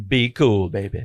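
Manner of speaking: voice dropped way down. Retelling a handcuffed woman's reply to a man calling out to her: very low voice. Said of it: "She's got a very low voice".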